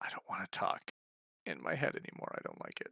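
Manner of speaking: low, quiet, breathy, under-the-breath voice. A character jumps down from a tree and comes over, speaking in a low voice. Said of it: "in a low voice, like not a whisper, but a low voice".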